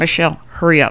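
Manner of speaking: side-mouth whisper. Retelling urging someone to hurry up, whispering through the side of the mouth. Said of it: "whispering through the side of my mouth".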